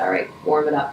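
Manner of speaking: ordinary delivery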